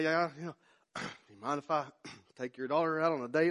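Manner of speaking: mock nervous stumbling over words. Retelling phoning a girl's father to ask for a date, stumbling over words. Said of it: "I stumbled over my words".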